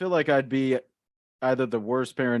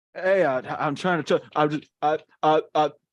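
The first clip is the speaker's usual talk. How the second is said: higher, halting, stammering schoolkid voice; 5 semitones higher, 4 dB louder than usual. Doing an impersonation of himself as a schoolkid on Zoom: imitating himself as a schoolkid on Zoom. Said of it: "here's my impersonation of me".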